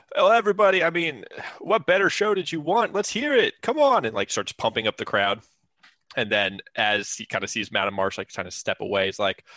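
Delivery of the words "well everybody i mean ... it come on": loud, very high-pitched triumphant shout. Retelling a game scene where Glenn pumps up the crowd: imitating Glenn, triumphant and loud. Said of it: "goes really triumphantly, loudly goes".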